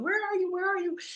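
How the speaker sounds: put-on frantic, panicked calling out, very high pitch. Recounting searching for her daughter, she is retelling a panicked yell. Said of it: "I was panicking and yelling".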